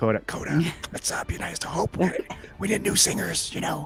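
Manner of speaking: very hushed, quiet whisper. Speaking privately to Coda during a group scene, whispering. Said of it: "I'm whispering to Coda".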